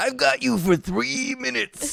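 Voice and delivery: very high, rough wrestler voice, "three" dragged out. Retelling a wrestler's movie line, imitating Randy Savage's delivery. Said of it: "He does it like the three, like this".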